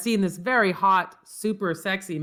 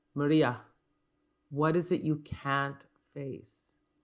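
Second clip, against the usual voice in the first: put-on thick German accent, slower; 4 semitones lower, 5 dB quieter than usual. Quoting the Mother Superior's line from a YouTube clip, in Mother Superior's German accent. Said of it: "she's got a very thick German accent".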